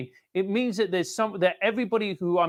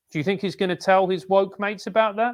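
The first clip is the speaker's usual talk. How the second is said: normal talking voice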